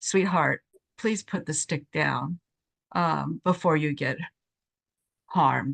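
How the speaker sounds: put-on soft, gentle, kind voice. Recounting how they talked a woman into putting a stick down, in a kind, gentle voice. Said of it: "we just talked in a kind, gentle voice to her".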